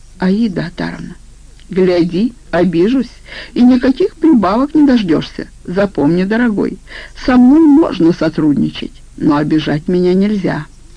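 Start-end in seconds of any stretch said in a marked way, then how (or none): none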